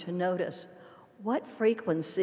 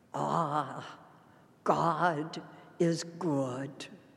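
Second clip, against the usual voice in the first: low voice in a Scottish brogue; 4 semitones lower than usual. Retelling what Jenny declared during communion, imitating Jenny's Scottish brogue. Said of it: "in that wonderful Scottish brogue".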